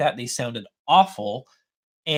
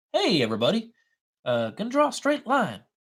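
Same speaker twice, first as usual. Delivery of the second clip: animated, high, swooping, put-on sing-song character voice; 8 semitones higher than usual. Trying an impression of someone who draws straight lines: Danny impression. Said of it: "let me try to see if I can do an impression of Danny".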